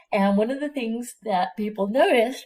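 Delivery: speaking through a yawn. Explaining the history of tobacco virus research, yawning. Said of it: "I'm yawning".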